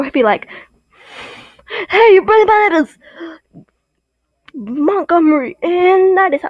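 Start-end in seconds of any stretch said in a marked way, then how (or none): 1.9-5.6 grumpy, grouchy rock-star voice and attitude. Speaker imagining how a man would sound, in a mock-grouchy rock star voice. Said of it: "like a rock star grouchy man".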